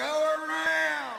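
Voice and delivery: very high, raspy, rough scream. Retelling a plane trip where the pilot yelled: imitating a screaming pilot. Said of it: "the pilot was screaming".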